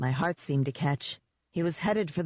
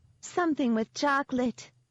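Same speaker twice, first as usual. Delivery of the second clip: drawled, teasing, high falsetto; 8 semitones higher than usual. Narrator reads a character's line, drawled in a high falsetto. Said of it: "Jenks drawled in a high falsetto".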